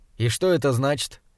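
ordinary delivery

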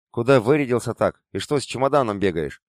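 usual speaking voice

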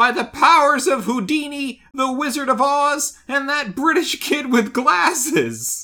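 grand, high, drawn-out yelled cry. Retelling a cartoon scene where Shaggy does magic: imitating Shaggy yelling. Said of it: "he yells out".

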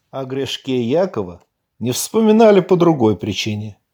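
plain

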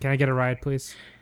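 put-on dejected voice. Retelling a scene where Ari asks for a ride: imitating Ari, dejected. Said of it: "very dejected".

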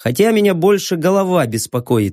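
ordinary delivery, nothing marked

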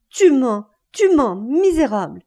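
crying out frantically. A man answers a woman's accusation, crying out frantically. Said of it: "éperdu, cria".

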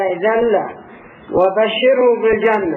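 usual speaking voice

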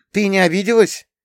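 glad, relieved outburst. After being thanked, a friend exclaims with relief. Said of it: "облегченно воскликнула подруга".

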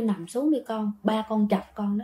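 hushed, soft, unvoiced whisper.

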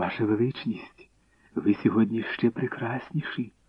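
in a whisper. Reading a character's words to the empress, whispering. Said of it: "розмовляла лише пошепки".

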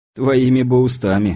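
grumbling, grumbled delivery. The narrator answers the officer who says the paralysis will pass, grumbling. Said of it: "буркнул я".

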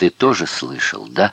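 ordinary delivery, nothing marked

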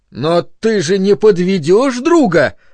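fawning, flattering, animated pleading. A man pleads with a friend who refuses to meet them, with a flattering yell. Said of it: "льстиво проорал Бернард".

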